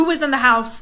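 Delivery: ordinary delivery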